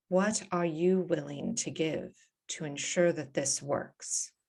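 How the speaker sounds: hushed, private-sounding half-whisper. A game master voices a queen speaking only to one player's character, in a half-whisper. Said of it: "she whispers".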